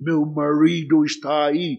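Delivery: put-on strong, heavy American accent. Retelling what a woman replied to a camel offer, in a strong American accent. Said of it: "com um sotaque bem americano".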